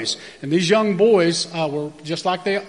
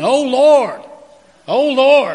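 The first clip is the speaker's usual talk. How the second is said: very slow, high, loud, frightened calling out; 8 semitones higher, 7 dB louder than usual. Retelling a woman shouting as she went into the baptism water, retelling scared shouting. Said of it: "she started shouting".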